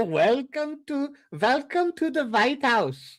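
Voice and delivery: vampire voice, pitched very high. Speaker riffs on robot rights, then gives a greeting in a Dracula voice. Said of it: "Dracula voice".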